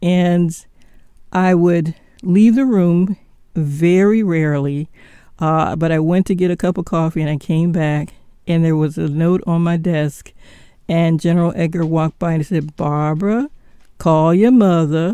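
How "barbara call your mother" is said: put-on Southern accent. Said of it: "he had a wonderful, uh, accent".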